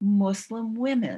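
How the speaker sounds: high, surprised voice. Retelling someone's response to the research: imitating a surprised voice. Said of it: "in a kind of surprised voice".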